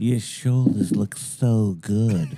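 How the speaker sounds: put-on flamboyant voice, very slow and drawn out.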